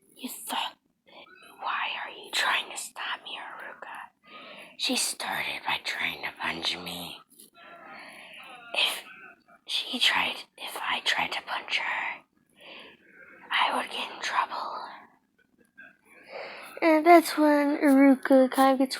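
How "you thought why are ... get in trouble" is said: put-on demon voice, lower and quieter. Acting out Naruto's lines in a story summary: Kurama demon voice. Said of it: "starts to go into a demon voice, like Kurama's".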